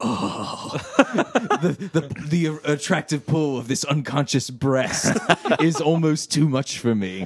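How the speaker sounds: put-on heavy sighs heaving through the line. Retelling Mythos's line in the scene: sighing, heaving Mythos voice. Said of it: "Mythos is sighing and heaving".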